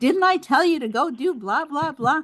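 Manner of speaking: acted-out high, scolding drill sergeant yell. Telling a story, acting out the sergeant at Vinny: retelling a sergeant's yell. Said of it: "he starts yelling at him".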